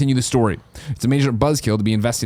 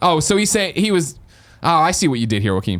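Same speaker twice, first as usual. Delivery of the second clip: usual speaking voice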